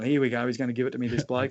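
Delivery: ordinary talk, nothing marked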